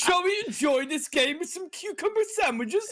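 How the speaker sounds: very high-pitched, la-di-da posh British accent. Offering to do a posh voice while talking about the game, posh British accent. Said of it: "Or I could do a posh one".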